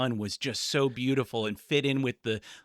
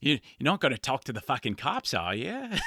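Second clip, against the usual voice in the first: swooping up-and-down pitch, sketch-comedy style. Quoting a comedy sketch to another speaker: quoting Aunty Donna sketch. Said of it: "Auntie Donna sketch w-, or the podcast where they're like".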